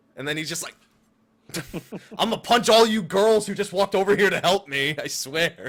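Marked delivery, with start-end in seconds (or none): 2.2-5.7 mock angry outburst, loud and high-pitched. Discussing the game's story, the speaker acts out Zell getting really angry. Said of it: "I like how he gets really angry".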